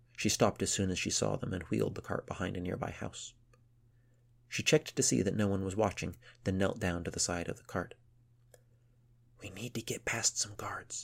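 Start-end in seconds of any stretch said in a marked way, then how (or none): 9.4-11.1 quiet, hushed whisper under the breath. Kneeling by the cart out of sight, she speaks to the others: whispered. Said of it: "she whispered".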